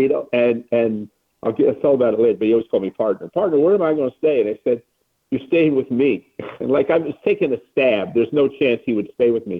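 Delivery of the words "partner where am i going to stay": put-on light Arkansas accent. Retelling Brooks calling him to ask where to stay, imitating Brooks's Arkansas accent. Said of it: "They had that little Arkansas accent".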